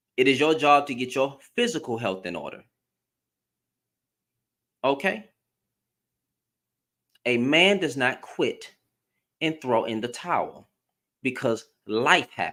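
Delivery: as stiff as possible, low, unbending delivery. Speaking directly to the men about their responsibilities, as stiffly as possible. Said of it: "I'm gonna say this as stiffly as I can".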